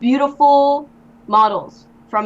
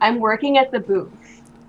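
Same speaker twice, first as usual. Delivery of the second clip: plain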